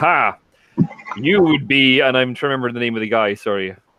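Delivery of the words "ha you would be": very slow, booming, drawn-out roaring bellow. Turning to the half-orc in the scene, bellowing. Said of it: "turn to the half-orc and bellow".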